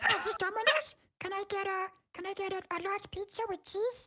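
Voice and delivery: tiny, squeaky, very high puppet voice, soft. Suggesting pizza orders in that voice, the speaker demonstrates: imitating the other speaker's voice. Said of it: "doing orders in that voice?".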